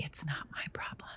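whispering quietly. Stating a point to get people's attention: whispering. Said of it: "I wanna whisper it because it gets people's attention".

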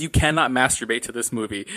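usual speaking voice

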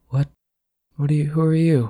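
groggy, dazed, high-pitched just-woken murmur. Just shaken awake, she looks at the person waking her, faintly murmuring. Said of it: "just sort of faintly murmurs".

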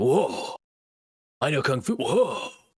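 cool, unhurried, slow, drawn-out delivery of each whoa. Quoting an actor's famous movie line: Keanu Reeves whoa impression. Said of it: "Where he's like".

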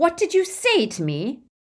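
icy, cold, high-pitched voice. Facing a semicircle of wizards, he speaks to the quaking figure at his feet; high, cold voice. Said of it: "His voice was high and cold".

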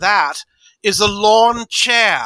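very slow put-on actress voice, each word drawn out. Retelling her best film line, in a Katharine Hepburn voice. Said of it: "in her best Katharine Hepburn voice".

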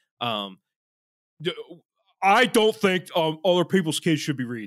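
put-on Philadelphia regular-guy accent. Speaker voices a dumb take someone argued, in a philly guy accent. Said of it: "I don't know why I'm doing a Philly guy".

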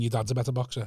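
put-on whisper. Acting out taunting a boxer in the ring: mock whisper. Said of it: "grabbing and whispering".

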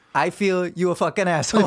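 put-on Italian accent. Redoing a sketch line as asked, with an Italian accent. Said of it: "but with an Italian accent".

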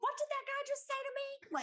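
very high, loud, blurted, acted toddler voice. Retelling what a young son said loudly during a blessing: imitating a loud child. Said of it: "really loud is like".

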